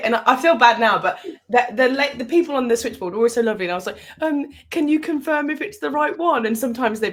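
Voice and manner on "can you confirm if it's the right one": mock hesitant, confused, flustered, high and slow. Retelling phoning the switchboard to check a number; imitating flustered, confused self. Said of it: "sounding all flustered and confused".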